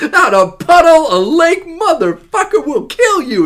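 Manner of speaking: very high, shrieking, drawn-out screaming rant. Recounting a scene from Deep Blue Sea, imitating a screaming character. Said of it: "and he's just screaming".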